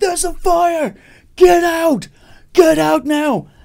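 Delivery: imitated screaming. Retelling a building fire, quoting what he yelled: retelling his screaming. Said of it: "and he's screaming".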